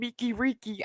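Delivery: jeering troll voice. Retelling how someone imitated a troll: imitating a troll's voice. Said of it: "Dove was imitating this troll".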